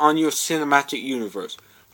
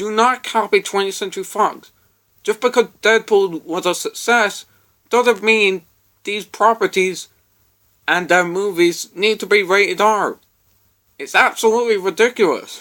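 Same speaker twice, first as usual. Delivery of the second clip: angry, worked-up, exasperated, heated rant; 4 semitones higher than usual. Speaker complaining to listeners about film studios, angry. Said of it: "I know I sound angry".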